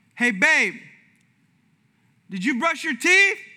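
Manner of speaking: loud call with pitch rising at the end. Retelling the wife calling from the bathroom: imitating wife yelling out. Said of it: "yelled out".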